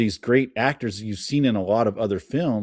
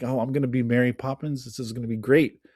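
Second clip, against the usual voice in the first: mock, bursting with thrilled, excited exclamation; 2 semitones higher than usual. Retelling how a woman invited to audition thought she'd be Mary, imitating her excitement. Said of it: "she got so excited".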